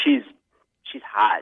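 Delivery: said in an unsettling, creepy way. Describing a woman met at a bar: creepy. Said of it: "It sounded very creepy the way you said that she's hot".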